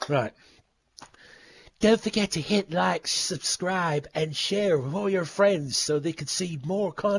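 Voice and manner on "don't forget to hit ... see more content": put-on announcer voice. Reading out the usual YouTube sign-off request: put-on announcer voice. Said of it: "I'm gonna do a proper voice for this".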